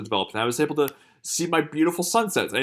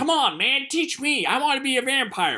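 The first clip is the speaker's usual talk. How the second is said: bad, very high-pitched, slow, drawn-out voice; 12 semitones higher than usual.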